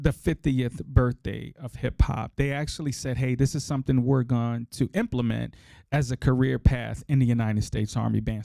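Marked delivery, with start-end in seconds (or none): none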